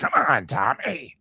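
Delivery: high tough-actor voice. Imitating Nick Nolte's line to Tommy: deep Nick Nolte impression. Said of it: "He goes, he goes, like".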